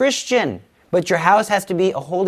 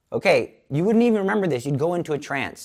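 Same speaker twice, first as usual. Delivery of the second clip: ordinary talk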